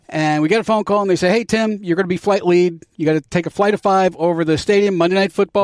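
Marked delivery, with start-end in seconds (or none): none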